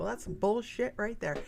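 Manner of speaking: ordinary talk, nothing marked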